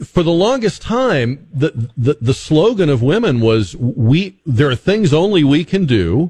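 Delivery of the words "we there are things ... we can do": normal talking voice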